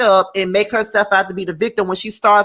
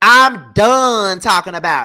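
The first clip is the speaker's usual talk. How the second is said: loud, sassy put-on voice with popping lips; 5 dB louder than usual. Reading a woman's statement aloud in her voice, lip-popping imitation of her. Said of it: "I gotta read it in her voice when she be popping her damn lip".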